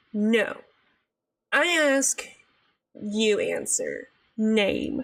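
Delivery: very slow, rude, curt, demanding cop voice. Speaker retells how a cop questioned them, imitating an interrogating cop. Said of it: "the cop was like interrogating us".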